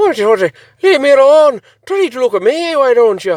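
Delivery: very high-pitched put-on Scottish brogue. Imitating someone telling off a drone at the window: put-on Scottish accent. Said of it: "Scottish accent, I don't know why".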